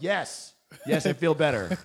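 put-on slow, loud yell. Retelling answering a comedian on stage: retelling a yell. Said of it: "I just yelled".

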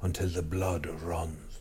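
hushed, quiet Irish accent. Repeating what he told you, saying his words in an irish accent. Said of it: "You need to say it in an Irish accent".

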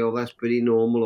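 ordinary talk

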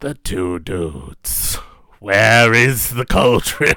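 deep, low, slow character voice. Showing how the other speaker might do a Horn King: Horn King voice. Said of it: "try to do a Horn King".

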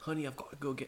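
put-on British accent. In banter between two speakers, saying a line in a British accent. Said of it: "British accent coming out".

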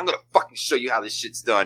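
put-on snotty, bratty teenage voice, talking back. Acting out how a snotty teenage kid would respond: imitating a snotty teenager. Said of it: "a snotty little sixteen, seventeen-year-old kid".

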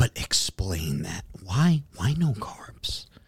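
hushed, slow, timid whisper. Retelling a woman at the bar quizzing him about his order; retelling a whisper. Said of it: "she's like whispering to me".

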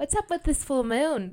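put-on English accent drifting Scottish. Imitating the chef Thea asking about the full moon: put-on English accent. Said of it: "She's English, so I might give it her a little".

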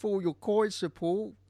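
high, mock Cockney accent with a lilt. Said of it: "with his perfect Cockney accent".

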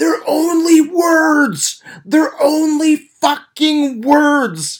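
very high, slow, stretched-out screaming. Recalling a man yelling at the TV, retelling a scream at the TV. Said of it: "I remember him screaming at the TV".

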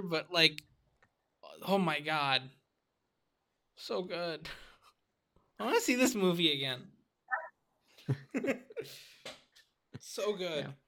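choked up, tearing up, emotional. Talking about a favorite movie scene, choked up, tearing up. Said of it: "tearing up right now just as I'm talking about it".

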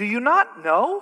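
slow, faintly condescending, pointed inflection. Quoting the Apostle Paul's repeated question to the congregation: somewhat condescending rhetorical question. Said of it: "Notice the inflection".

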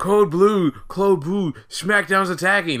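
mock frantic, high, drawn-out crazed yell. Retelling how Kurt Angle freaked out on a walkie-talkie: imitating Kurt Angle yelling crazily. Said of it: "yelling into a walkie-talkie, all crazy like".

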